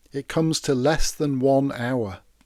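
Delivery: plain reading voice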